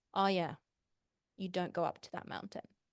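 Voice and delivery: ordinary talk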